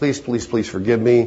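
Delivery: put-on tearful, crying pleading voice. Retelling a man who gets down and begs his wife; imitating crying begging. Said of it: "he just gets down and just cries and says".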